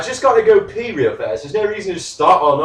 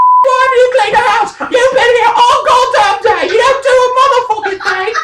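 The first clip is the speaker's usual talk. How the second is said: shrill, very high, raised put-on woman's voice; 5 dB louder than usual. Told they sound like a woman, showing what that would sound like: mock woman's voice. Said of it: "if I sounded like a woman, it'd be more like this".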